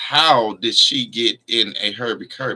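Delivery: ordinary talk, nothing marked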